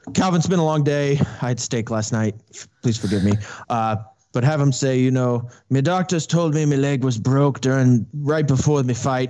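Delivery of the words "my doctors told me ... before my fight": spoken with an Irish accent. Imagining a fighter calling a game, Conor McGregor impression. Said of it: "Scottish accent or Irish ac-".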